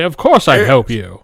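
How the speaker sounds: deliberately manly, heroic put-on voice. Imitating a dungeon master answering a new player: manly voice. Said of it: "He would do it in a manly voice".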